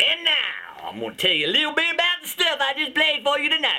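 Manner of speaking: southern American accent. Telling listeners about the songs just played, in a Southern accent. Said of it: "Why am I talking Southern?".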